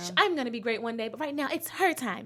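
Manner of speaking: polished TV voiceover narrator voice. Retelling own past thoughts about dimming for a friend: Disney Channel narrator voice. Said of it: "that was a Disney Channel".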